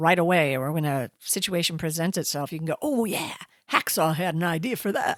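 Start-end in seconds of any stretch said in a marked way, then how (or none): 2.8-5.2 on-air DJ-style radio announcer voice. Introducing today's hacks, voicing what a listener might say, in a radio voice. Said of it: "That's a good radio voice right there".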